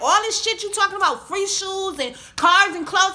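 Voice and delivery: high, loud, angry ranting voice. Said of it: "So I start getting loud".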